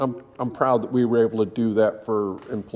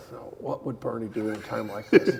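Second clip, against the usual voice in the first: put-on muttering under the breath, quieter; 2 semitones lower, 5 dB quieter than usual. Retelling what someone mutters at work: imitating muttering under breath. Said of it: "you kinda hear him under his breath".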